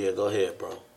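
ordinary delivery

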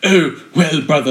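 put-on posh, upper-class, posher-sounding delivery. Mimicking a brother who sounds far posher than his sibling, in a posh voice. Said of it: "why is this brother so much posher sounding".

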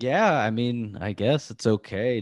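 put-on lukewarm, unconvinced, noncommittal tone. Retelling an answer to an angry inmate: imitating a half-hearted answer. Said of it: "one of those half-hearted answers".

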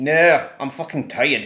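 put-on British accent. Podcast hosts playing a bit, answering an offer of tea, fake british accent. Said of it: "mas tu tiveste em que cidade britânica?".

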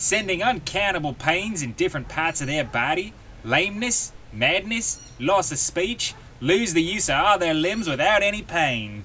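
put-on amateur Australian accent. Reading out a quote about Obeah torments in a put-on Australian accent. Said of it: "That's the best Australian accent I can do".

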